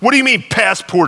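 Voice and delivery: cross, stern tone. Narrator reads a woman answering an officer who asks for passports, stern and cross. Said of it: "she said sternly".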